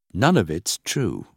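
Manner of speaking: plain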